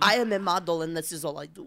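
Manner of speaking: put-on Russian accent. Acting out a model character in a movie: put-on Russian accent. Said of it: "I gave her that accent".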